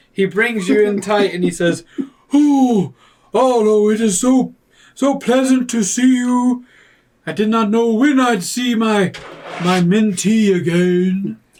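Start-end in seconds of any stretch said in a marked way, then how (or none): 2.4-11.4 slow, puffing, out-of-breath heavyset character voice. Voicing a portly character greeting Arlo with a hug: out-of-breath portly character voice. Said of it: "Why am I talking like that?".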